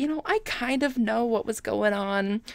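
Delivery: ordinary delivery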